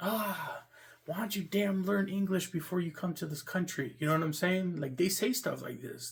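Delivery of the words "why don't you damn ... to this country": put-on irritated, exasperated, aggravated tone, pitched up.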